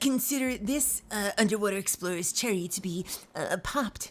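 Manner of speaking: geeky movie-nerd voice. Playing an underwater game, commenting on the explorer, in a Revenge of the Nerds voice. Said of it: "this Revenge of the Nerds style voice".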